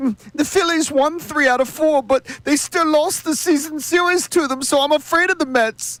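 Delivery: squeaky, very high-pitched cartoon pig voice. Mocking fans who tweet from under the covers: pig from Shrek voice. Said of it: "why do you sound like the pig from Shrek?".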